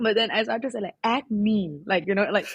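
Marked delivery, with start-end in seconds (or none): 1.0-1.8 put-on American accent on the word acne. Retelling saying a product name at the pharmacy: us accent. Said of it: "like U S accent".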